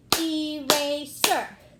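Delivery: slow, loud, clapped out syllable by syllable. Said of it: "Let's clap it out".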